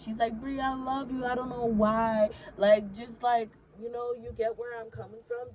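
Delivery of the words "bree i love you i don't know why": acted-out crying, tearful speech. Retelling what a drunk friend said on the drive home: imitating someone crying. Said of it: "and she's crying now".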